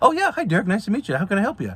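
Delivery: sudden eager politeness, bright, high and friendly. Imitating how people answer a recruiter's phone call, voice jumps way up. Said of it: "their voice just just uh, goes three three levels up".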